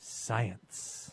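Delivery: hushed, awed whisper, full of reverence. Showing how the word science must be said: reverent, awed science. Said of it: "You have to say the word science with reverence, like awe in your voice".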